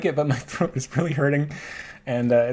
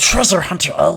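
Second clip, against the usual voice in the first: loud, full put-on creature voice; 3 semitones higher, 6 dB louder than usual. Getting into the Smeagol character, then speaking as him: Smeagol voice. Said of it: "I gotta get into the Smeagol character".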